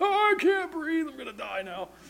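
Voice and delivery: very high, soft gasping for air. Speaker acts out lying on your back after a fall, mock gasping for air. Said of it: "lay there gasping for air like".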